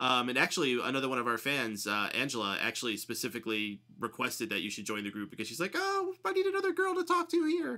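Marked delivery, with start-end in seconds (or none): 5.7-7.8 squeaky, badly done, very high falsetto. Retelling a fan's request to join the group: terrible Angela impression. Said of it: "That was a terrible impression".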